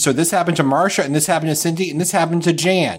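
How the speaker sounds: ordinary talk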